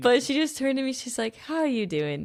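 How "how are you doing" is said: acted gentle, soft, calming, kind, welcoming voice. Quoting a woman who turned to ask how she was, imitating a soothing, kind voice. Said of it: "in that voice that she has, just very soothing and".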